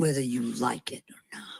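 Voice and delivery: deep, low growl, dropping way down. A woman speaking as God, in a growling God voice. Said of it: "That's a God voice when she gets down and growls like that".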